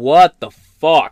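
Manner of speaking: very loud, booming, blurted outburst. Recalling watching a video, the speaker retells a loud exclamation. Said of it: "I very loudly went".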